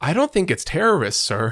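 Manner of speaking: earnest, sincere, high, swooping delivery. Retelling a negotiation scene to co-speakers, mock-earnest Mark York line. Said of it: "it'd be so earnest".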